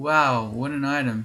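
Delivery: mocking, sarcastic, slow drawl. Reacting to a found game item, Tin of Tremor Stones: sarcastic. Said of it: "I'm being so sarcastic".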